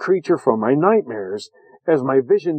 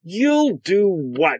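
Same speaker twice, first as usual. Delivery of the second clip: menacing, high, vicious snarl; 5 semitones higher than usual. She cuts in on the narrator's unfinished threat: snarled. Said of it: "she snarled".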